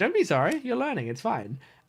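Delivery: put-on comforting, soothing tone. Retelling what a driving teacher said after an apology: imitating a comforting tone. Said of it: "she had such a tone that was so comforting".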